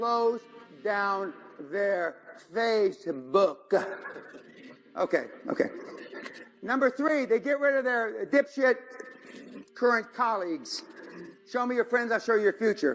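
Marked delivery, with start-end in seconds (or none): 0.0-3.9 very slow, deliberate, word-by-word delivery. Listing steps, the speaker repeats one deliberately for the listener, said real slow. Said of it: "I'm going to say it real slow for you".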